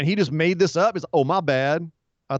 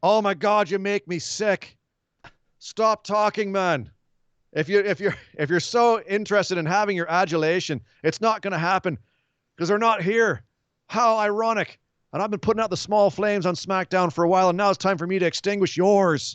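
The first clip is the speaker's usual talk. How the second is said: put-on furious, angry rant in Irish accent; 4 semitones higher than usual. Retelling a wrestling promo, Sheamus confronting Jeff Hardy: imitating Sheamus angrily. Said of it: "an angry Irishman in the form of Sheamus".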